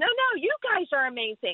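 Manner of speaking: mild, modest, acted-out yell. Retelling a stranger's reply in a parking garage: imitating someone yelling back. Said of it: "she yelled back at us".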